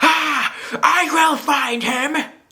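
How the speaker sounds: cartoony villain scream, very high, very slow, overdone. Mocking an overacted movie villain, imitating Michael Shannon's screaming Zod. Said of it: "he's, like, screaming".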